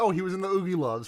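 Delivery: ordinary talk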